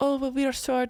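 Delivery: put-on French accent. Repeating a girl's reply to her complaint: imitating a girl's French accent. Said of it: "in her French accent".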